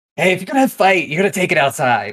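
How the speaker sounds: shouting. Playing a character breaking up a fight, the speaker moves toward them, yelling. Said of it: "I'm yelling".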